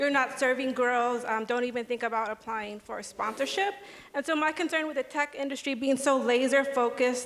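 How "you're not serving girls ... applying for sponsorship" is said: ordinary talk, nothing marked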